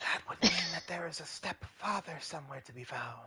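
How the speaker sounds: soft, unvoiced whisper. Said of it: "I'm whispering to, like, the rest of everyone".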